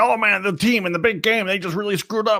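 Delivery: angry radio caller rant. Describing sports call-in shows, imitating an angry sports call-in caller. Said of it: "You sound like the angry guy".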